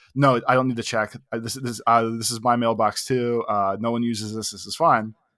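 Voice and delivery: plain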